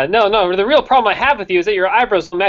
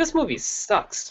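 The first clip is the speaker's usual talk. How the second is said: put-on breathy whisper, little energy with a small spark; 7 semitones higher, 9 dB quieter than usual. Redoing own earlier line to correct an imitation: imitating own line with a little energy. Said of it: "it had a little energy to it".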